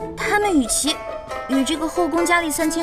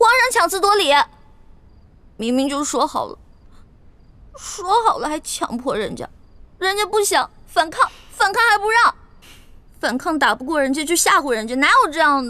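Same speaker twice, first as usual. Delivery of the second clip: crying, tearful, complaining tone; 3 dB louder than usual. A woman protests to the emperor in his bed, tearful complaining. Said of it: "别哭了。".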